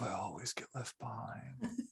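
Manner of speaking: barely audible, very quiet muttered grumble. Game master voicing the bass guitarist Boneb Handy, muttering to himself. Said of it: "he mutters to himself".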